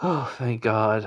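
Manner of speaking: slow, sighing relief.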